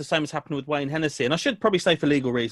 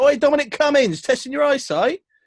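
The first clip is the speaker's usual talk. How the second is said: pretend yell, higher and louder; 11 semitones higher, 6 dB louder than usual. Showing what to shout at a bad driver: mock shouting at a driver. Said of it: "Now you can shout".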